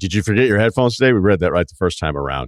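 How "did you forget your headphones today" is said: tone dripping with heavy sarcasm. Retelling what a man said in an anecdote: mock-sarcastic question. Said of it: "he said sarcastically".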